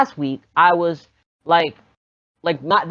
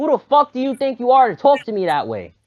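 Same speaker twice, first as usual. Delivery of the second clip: acted out, loud, angry yelling; 6 semitones higher than usual. Retelling what they said to a teacher: own loud angry outburst. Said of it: "like, mad loud, 'cause I'm starting to get mad".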